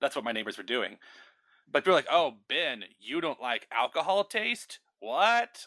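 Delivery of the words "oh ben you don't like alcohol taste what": play-acted slow, dismissive clean-cut tone, drawn out. Retelling what people say to you: imitating a dismissive tone. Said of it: "that dismissive, clean-cut tone".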